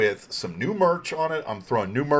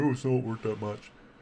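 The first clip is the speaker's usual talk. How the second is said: mock derisive laughter, quieter and faster; 3 semitones lower, 7 dB quieter than usual. A show host imitates dismissive forum commenters, mimicking laughing forum commenters. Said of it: "you'll have people like laughing and saying".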